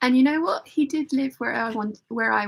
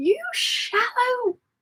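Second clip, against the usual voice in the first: put-on furious male scream, higher; 13 semitones higher than usual. Retelling how a date screamed at her in a pub: imitating a man screaming. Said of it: "starts screaming at me at the top of his lungs".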